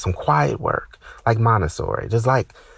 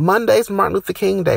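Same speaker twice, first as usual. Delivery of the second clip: very high, shrieked scream; 10 semitones higher than usual. Recounting a woman who called out to him as he passed her office, imitating her scream. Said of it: "she screams that".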